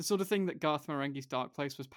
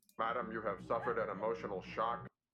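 deep, low-pitched cyborg voice; 4 semitones lower, 4 dB quieter than usual. Retelling how RoboCop answered the shot wife: RoboCop voice. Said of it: "RoboCop was like".

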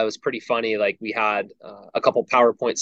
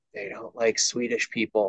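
hushed, quiet half-whisper; 7 dB quieter than usual. Retelling a player half-whispering to the head coach: imitating a half-whisper. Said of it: "whispers over to Kirk".

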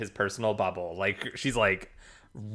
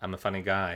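mock-deadpan delivery, quieter; 2 semitones lower, 4 dB quieter than usual. Recapping a tv scene and quoting his reply, retelling a deadpan line. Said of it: "totally deadpan".

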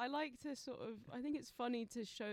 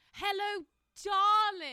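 loud, high, extravagant, over-the-top theatrical voice; 9 semitones higher, 14 dB louder than usual. Imitating actor grandparents saying hello darling, extravagant theatre voice. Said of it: "the most extravagant, like, kind of theatre voice".

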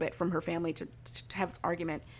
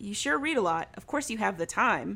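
plain

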